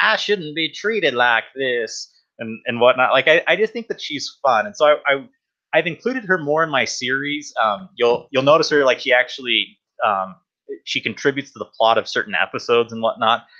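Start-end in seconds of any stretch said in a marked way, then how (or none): 0.0-2.1 put-on elderly lady's voice with Southern accent. Describing a favorite character from her series, doing Caroline's old-lady southern accent. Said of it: "old lady with um like kind of a southern accent".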